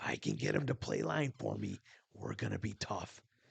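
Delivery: put-on voice, half whispered, hushed and breathy. Retelling what someone said about two brothers, Kurt Fisher voice. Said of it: "I'm using my Kurt Fisher voice right now".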